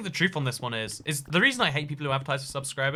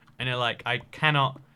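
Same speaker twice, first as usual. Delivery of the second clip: normal talking voice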